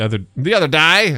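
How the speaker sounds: put-on Australian accent. Repeating a remark about eating Takis, Australian accent. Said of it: "I just dropped an Australian accent".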